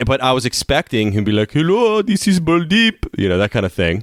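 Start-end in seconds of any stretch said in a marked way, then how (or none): 1.5-3.1 put-on Indian accent, very high-pitched. Retelling how he expected a man to answer the phone: imitating an Indian accent. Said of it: "wow, you actually do that pretty well".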